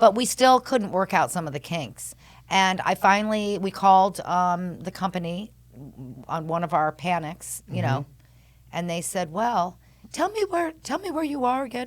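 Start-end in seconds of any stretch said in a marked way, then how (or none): 9.3-11.9 put-on German-accented voice, pitched up. Retelling a call to the company, quoting the person who answered in a put-on German accent. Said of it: "with their German accent".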